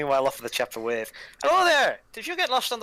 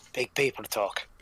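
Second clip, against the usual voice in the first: soft, hushed half-whisper under the breath; 6 semitones lower, 3 dB quieter than usual. A halfling nudges a fellow halfling during play, half-whispering.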